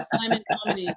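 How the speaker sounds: ordinary talk, nothing marked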